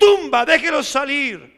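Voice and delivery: play-acted loud, commanding voice like a general. Acting out a command to the tomb to let the dead out: imitating a commanding voice. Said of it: "con voz de mando".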